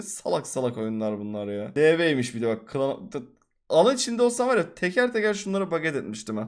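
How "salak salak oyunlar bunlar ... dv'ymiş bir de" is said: usual speaking voice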